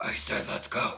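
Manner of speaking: hushed, breathy superhero whisper, breathed out. Speaker, running late, repeats the order to the children: Batman voice. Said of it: "Batman voice".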